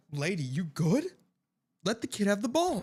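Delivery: light, put-on calling out, mock yelling. Retelling how the crowd reacted to the woman: imitating people yelling. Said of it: "everybody's yelling for her to leave".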